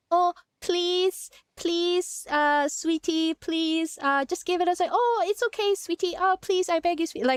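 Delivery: sugary, cute pleading. Mocking how people replied in a cute way, imitating a cutesy aegyo voice. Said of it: "They answered in a very cutesy way".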